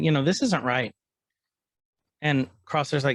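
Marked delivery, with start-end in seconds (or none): none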